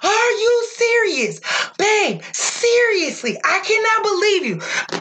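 mock upset yelling, very high, swooping and drawn out. Retelling yelling at her partner over dates that didn't work; retelling losing it, yelling. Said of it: "I literally like lost it on him".

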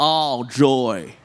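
put-on American accent. Leading everyone in saying a phrase in different accents, in an American accent. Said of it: "Say all joy like an American".

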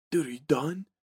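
very quiet, hushed aside. Retelling a film scene where Johnny speaks off camera: very quietly. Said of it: "off camera very quietly".

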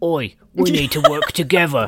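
put-on British accent, called out loudly. Recapping a scene, the speaker voices Frank calling Machine Gun Joe as a Jason Statham impression. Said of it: "I did like your Jason, Jason Statham impression".

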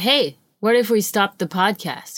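normal talking voice

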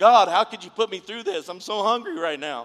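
very loud, high, screaming wail. Speaking about fasting, voicing a hungry stomach, mock screaming. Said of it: "Your stomach's going to start screaming like".

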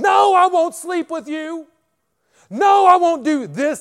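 very high, very loud, shrill, drawn-out shouting. Retelling how a woman suddenly turned on the speaker: retelling a woman raising her voice. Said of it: "And she started raising her voice".

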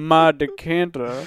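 put-on New Orleans accent with drawl. Repeating a line after being asked for more New Orleans flair: put-on New Orleans accent. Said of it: "You gotta put a little bit more New Orleans flair on that".

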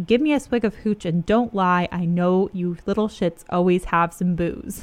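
normal talking voice

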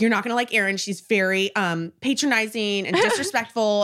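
ordinary delivery

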